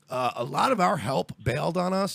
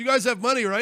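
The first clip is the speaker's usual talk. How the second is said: offhand, half-joking, casual tone; 7 semitones higher than usual. Retelling a taxi driver asking crying passengers for money: imitating someone playing it off as a joke. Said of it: "She does that thing where you try to play it off like you're kidding".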